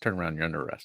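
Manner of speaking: mock straight, no-nonsense, flat deadpan delivery. Imagining how the video could end, imitating a deadpan cop. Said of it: "he just goes straight face and goes".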